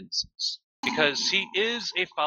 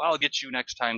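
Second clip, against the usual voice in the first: normal talking voice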